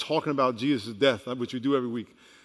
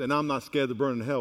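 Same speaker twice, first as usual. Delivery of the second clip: ordinary talk, nothing marked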